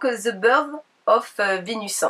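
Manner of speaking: English with a French accent. French speaker presenting a face mask, saying its English name, French-accented English. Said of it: "désolé pour mon accent anglais".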